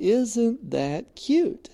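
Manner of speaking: high, slow, charmed reaction. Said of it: "at first I went".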